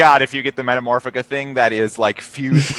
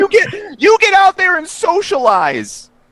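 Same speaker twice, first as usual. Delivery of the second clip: very high, swooping motherly voice. Pretending to be another speaker's mother and scolding him: imitating a friend's mother. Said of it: "I will be playing your mother".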